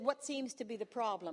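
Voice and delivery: ordinary talk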